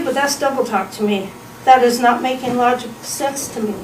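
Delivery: ordinary delivery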